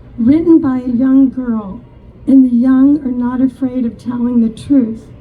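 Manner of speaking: ordinary delivery, nothing marked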